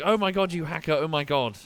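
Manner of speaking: mock half-hearted, mild screamy yelled outburst. Retelling players who accused the speaker of hacking, imitating screaming players. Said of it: "they were screaming at me".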